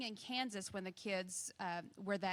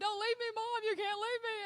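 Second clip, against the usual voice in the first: mock shrill, piercing, very high, loud child's scream; 13 semitones higher, 5 dB louder than usual. A mother retells her son Joel clinging to her leg, imitating Joel screaming. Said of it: "is doing the just screaming".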